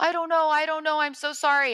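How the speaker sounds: high, panicked, sobbing, crying voice.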